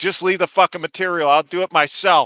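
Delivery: put-on yelling outburst. Retelling shouting at workers from the house: imitating own past yelling. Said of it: "And I'm just yelling".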